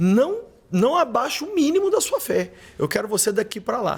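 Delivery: put-on stern motherly voice. Imagining his real mother's words, imitating a mother scolding firmly. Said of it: "minha mãe real ia me dar uma dura".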